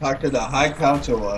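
plain

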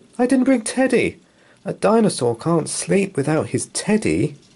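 very high cry following a gasp. Reading Dinosaur's line on the path to the party, with a gasping cry. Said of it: "gave a gasp and cried".

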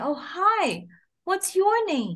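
high, wide, bright, friendly sing-song voice.

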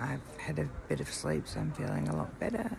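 hushed whisper. Recording an early-morning video update at 6 a.m., whispering. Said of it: "I'm whispering".

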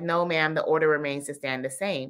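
ordinary talk

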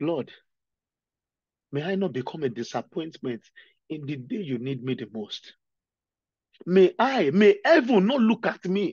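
tearful, crying, speaking through tears. Speaker leads the brethren in prayer, crying while praying. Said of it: "The reason why I'm crying".

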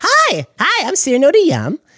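very high, slow, drawn-out swooping character voice. Asked for a taste of their character, the performer introduces him: very high Cyrano de Yam voice. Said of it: "He's very high".

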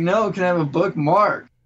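upset yelling. Retelling a classmate asking again for a bookmark: imitating someone yelling. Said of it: "Why are you yelling?".

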